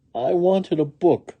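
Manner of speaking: trembling, unsteady voice. Narrating a story, the first-person narrator answers a questioner, in a shaky voice. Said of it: "I said in a shaky voice".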